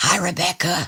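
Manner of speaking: hushed, soft, secretive half-whisper. Welcoming a guest whose presence is usually a secret, half-whispering. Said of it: "I'm whispering".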